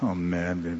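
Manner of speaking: grumbling in an undertone. Showing what the word complaining sounds like: muttering under breath. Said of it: "The word means under your breath. It's this".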